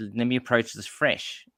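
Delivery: plain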